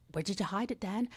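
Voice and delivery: put-on Irish accent. Quoting a line from the Leprechaun films in Leprechaun's Irish accent. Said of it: "just practicing the Irish accent".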